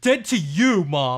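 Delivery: very loud, angry shouting. Playing a son answering his mom in a comic scene, yelling. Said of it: "Sorry. I'm yelling".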